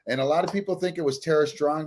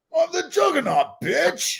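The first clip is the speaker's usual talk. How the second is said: very high, swooping, taunting villain voice; 3 dB louder than usual. Quoting a movie villain line after the other speaker names the actor: Vinnie Jones as Juggernaut. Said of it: "That was a good impression".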